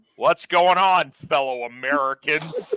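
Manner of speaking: fake American accent, drawn out very slowly. Speaker demonstrating talking american while hanging out, put-on american accent. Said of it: "Luke's just talking American".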